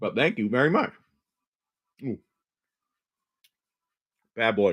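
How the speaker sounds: talking with mouth full. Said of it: "Talk to my mouthful".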